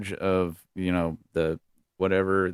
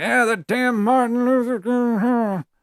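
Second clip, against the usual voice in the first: put-on very high, loud old Republican voice; 5 dB louder than usual. Mocking how old Republicans talk about a civil rights leader: imitating an old Republican. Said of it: "old-ass Republicans that still talk like that".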